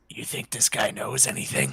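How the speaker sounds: quiet, hushed sidelong whisper. Playing a character who quietly asks a companion about the shopkeeper: whispering. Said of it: "whisper to him".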